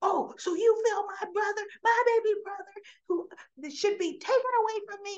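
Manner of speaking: loud angry yelling, voice shot way up high. Retelling a scene where a character yells at another: imitating someone yelling. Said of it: "He's yelling at her".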